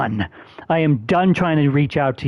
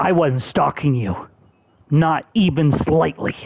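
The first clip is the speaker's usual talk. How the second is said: furious, raging, frothing with anger. Denying that he stalked someone, frothing with anger. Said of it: "It's frothing from the mouth".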